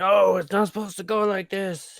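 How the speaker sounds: furious, high-pitched, angry screaming. During a game, voicing a character's outburst after a save roll: screaming. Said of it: "He just starts screaming like".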